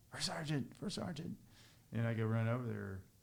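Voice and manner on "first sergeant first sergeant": put-on soldier yelling, pitched higher. Retelling a combat story, a soldier calling out: imitating a soldier yelling. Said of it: "this guy is yelling".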